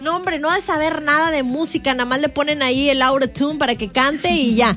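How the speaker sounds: ordinary talk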